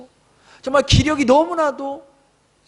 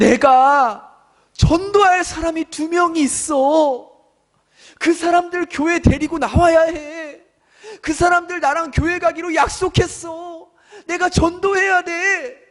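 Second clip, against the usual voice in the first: tearful voice on the edge of tears; 2 semitones higher than usual. Retelling what a suffering church member said to them, imitating tearful speech. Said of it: "울먹이면서 그렇게 말씀을 하시는 거예요".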